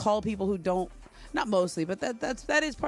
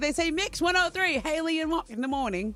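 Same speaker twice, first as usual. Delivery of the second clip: put-on Australian accent, pitched up, not quite landing; 7 semitones higher than usual. Imitating how australian radio hosts say their show's name: attempted australian accent. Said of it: "I can't quite get the Aussie".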